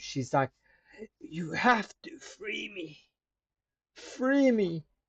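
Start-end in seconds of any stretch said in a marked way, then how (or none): 1.2-4.8 high, drawn-out calling woman's voice. Voicing the voice heard in the back of the head: woman's voice calling in your head. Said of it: "She's calling to you".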